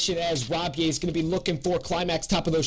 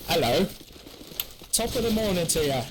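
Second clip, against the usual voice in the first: English accent, put on for fun. Switching it up on a new map, in an English accent. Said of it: "Let's start using English accents".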